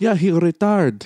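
put-on thick Filipino accent, rolled R. Retelling what an aunt said about the neighbor: imitating aunt's thick Filipino accent. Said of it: "'Cause the thick accent, like, the R gets rolled in".

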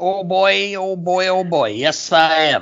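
weird, cartoonish pig voice. Dad, welcomed back for season two, answering in a weird Porky Pig voice. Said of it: "You sound like a weird, like Porky".

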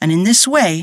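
plain

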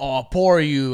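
dripping sarcastic tone with fake sympathy. Retelling an argument scene, the side chick answers him; mock-sarcastic quote.

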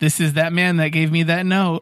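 ordinary talk

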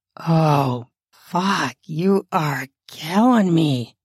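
lust-laced, exclaiming, heavy with lust. Narrator reads a man's words during an intimate scene, lust-laced voice. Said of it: "with a load of lust laced into his words".

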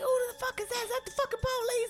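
put-on screaming, very high. Retelling how a best friend on the phone reacted, retelling a friend screaming. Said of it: "and she was screaming".

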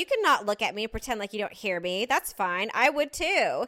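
loud, pointed, put-on talk meant to carry. Retelling what a mom said to someone in a parking spot: imitating someone talking loudly. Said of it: "she was talking really loud".

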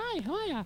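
squeaky, very high-pitched, hushed, small. Imitating a little turtle's intro greeting: imitating a high-pitched greeting.

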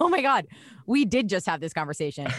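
ordinary talk

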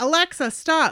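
acted-out frightened, frantic yell, high and loud. Reading aloud a scary story about a device that won't stop: yelling. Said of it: "kept yelling".

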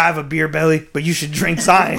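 put-on commercial spokesman voice. Retelling an old commercial where a man pulls a Hummer: imitating a commercial spokesman. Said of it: "he's like".

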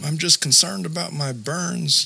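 put-on high, teary, crying small-child voice. Retelling what a burned child said: imitating a crying little kid voice. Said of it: "crying in his little kid voice".

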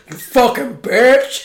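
earnest, dead serious put-on voice. Retelling a movie character's line before he gets stabbed: imitating a real deep voice. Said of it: "his voice went real deep for that".

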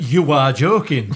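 mock mild shouted outburst. Retelling watching the game at home: imitating own shout at top of voice. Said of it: "shouting at the top of my voice".

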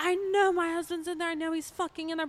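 tearful, shrill, loud screaming, way up high. Retelling a wife banging on the door for her husband, imitating a woman screaming. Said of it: "she was screaming at the girls".

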